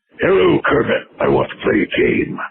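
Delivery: horror-film puppet voice. Retelling a fan fiction scene, voicing the puppet from Saw. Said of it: "the puppet from Saw comes on the T V, and he's like".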